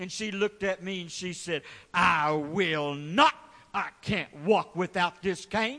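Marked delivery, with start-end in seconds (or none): 1.9-5.8 put-on slow, sassy, defiant voice full of attitude. Speaker retells a woman's answer after he asked for her cane, imitating her attitude. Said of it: "she said it with attitude".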